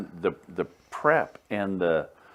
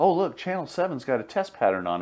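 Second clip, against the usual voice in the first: raised, teasing joking tone. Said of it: "we lovingly would say".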